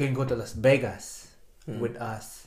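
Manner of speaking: thick put-on Filipino accent, low and soft. Retelling a woman recruiting them with a ring and Las Vegas pictures, thick Filipino accent. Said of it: "Thick, like very Filipino accent".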